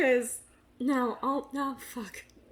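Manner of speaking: slowed speech broken up by giggles. Trying to make a point but breaking up: laughing while talking. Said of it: "now I'm laughing too much to get through it".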